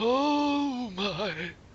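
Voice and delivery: put-on very high, drawn-out old person's voice. Trying out a voice for an old cartographer character: old person's voice. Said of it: "make an old person's voice all the time".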